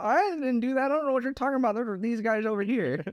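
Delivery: put-on old-timer voice, pitched very high. Mocking how older people respond when called out, in an old person voice. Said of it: "It's an interesting old person voice you got there".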